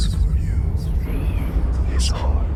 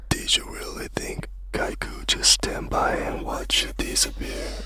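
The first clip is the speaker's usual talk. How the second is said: hushed whisper, much higher and quieter; 8 dB quieter than usual. In a scene, a character speaks into another person's ears, whispering. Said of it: "what the hell you whispering in my ears".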